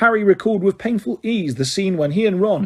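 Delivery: ordinary delivery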